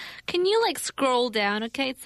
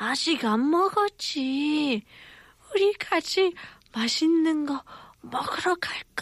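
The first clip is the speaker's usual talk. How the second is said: put-on weak, dying-sounding grandma voice, higher; 3 semitones higher than usual. Playing a grandmother answering her grandchild in korean, dying-sounding grandma voice. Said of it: "I sound like I'm dying".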